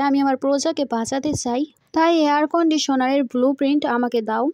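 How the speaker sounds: plain reading voice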